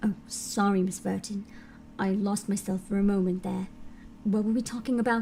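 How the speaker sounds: trying for a low voice. Playing a character addressing miss burton, the speaker is trying for a low voice. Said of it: "I can't get my voice low enough".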